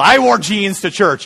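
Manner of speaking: excited, giddy boastful tone. Retelling what grandfather said about church: imitating a giddy rebellious teenager tone. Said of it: "like a giddy teenager that had kind of this rebellious tone".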